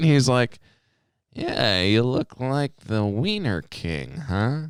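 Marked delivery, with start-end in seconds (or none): 1.3-4.6 slow, offhand, unbothered, nonchalant drawl. Retelling what a man said while the speaker worked the hot dogs: mimicking a low, slow nonchalant voice. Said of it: "very nonchalantly and very kind of low and slow".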